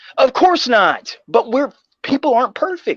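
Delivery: very high, heated, worked-up shouting. Arguing about couples who decided to be committed, a speaker pushes back, yelling. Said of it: "Sorry, I'm yelling".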